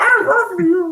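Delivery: very high-pitched, dog-like talking voice. Joining in, imitating the talking dog: imitating a talking dog. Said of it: "like the talking dog".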